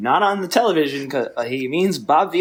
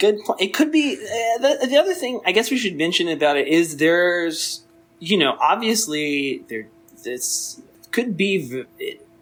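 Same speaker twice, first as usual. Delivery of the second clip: stammering false starts, repeated words, halting; 4 semitones higher than usual. About to say something serious to the other speaker, stuttering. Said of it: "I'm stuttering".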